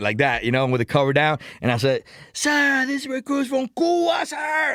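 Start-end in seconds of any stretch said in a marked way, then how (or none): 2.3-4.8 put-on very high-pitched, drawn-out, slow, loud bellow. Recruit answers the drill instructor asking where he's from, retelling own loud yell. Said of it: "Like loud, man".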